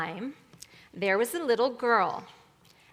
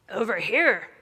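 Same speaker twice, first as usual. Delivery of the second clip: husky, hoarse voice, louder; 4 dB louder than usual. A voice from the bed answers the girl calling for her grandmother, husky voice. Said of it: "cried a husky voice from the bed".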